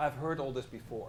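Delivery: ordinary delivery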